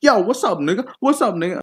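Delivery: mocking thug voice. Mocking how one guy thinks African Americans talk: mocking stereotyped thug voice. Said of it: "they talk like this".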